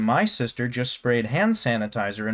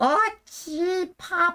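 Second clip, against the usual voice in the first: very high-pitched, clumsy cartoonish voice. Trying a high cartoon voice, but it slips: high Betty Boop voice. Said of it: "it's like a Betty Boop".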